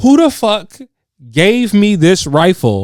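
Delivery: acted drill sergeant voice, screaming in high-pitched fury. Retelling a man who got angry and belligerent, imitating him screaming. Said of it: "And then he's just screaming".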